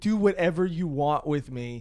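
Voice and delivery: plain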